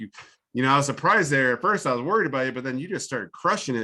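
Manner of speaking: plain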